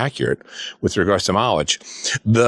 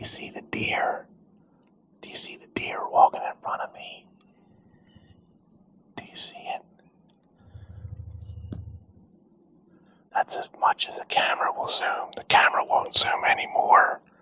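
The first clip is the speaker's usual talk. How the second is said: whispered, hushed, soft, kept right down; 8 dB quieter than usual. Filming a deer while Abby gets a picture, whispering. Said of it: "I'm whispering because my Abby is getting a picture".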